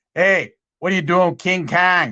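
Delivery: Chicago-style way of talking. Retelling how Frank looked up without getting up: Frank's Chicago accent. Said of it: "that Chicago accent of his".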